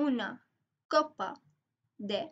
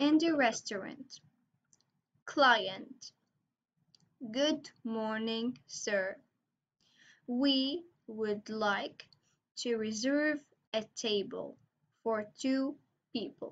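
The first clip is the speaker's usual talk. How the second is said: very slow, careful, deliberate read-through. Reading an English translation of a restaurant dialogue aloud, very slow reading. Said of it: "I'm gonna read it very slowly".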